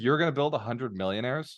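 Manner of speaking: put-on complete disbelief, incredulous. Retelling how she questioned a big goal: imitating someone's disbelief. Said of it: "in complete disbelief".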